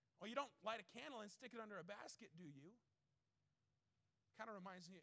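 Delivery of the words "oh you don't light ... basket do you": mock sarcastic tone. Retelling what Jesus said to the disciples: retelling Jesus' sarcastic words. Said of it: "Jesus' little sarcastic statement".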